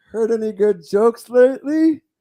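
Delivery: terrible, clumsy put-on voice, squeezed up high. Retell a favorite moment from the MTV Video Music Awards in a terrible Pee-wee Herman impression. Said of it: "Terrible Pee Wee Herman impression".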